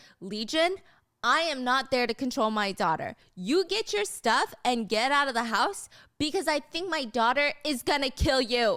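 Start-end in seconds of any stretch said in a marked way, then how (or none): none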